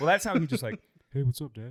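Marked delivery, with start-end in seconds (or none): 1.1-1.7 put-on laid-back, unbothered, low-key kid voice. Showing how the kid greets Dad: imitating the kid, low key. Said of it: "just very, just, like, low key".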